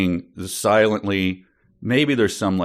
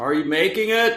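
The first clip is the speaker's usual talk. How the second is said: loud, very high yelling; 11 semitones higher than usual. Acting a scene wearing noise reduction headphones, yelling. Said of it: "with you yelling like that".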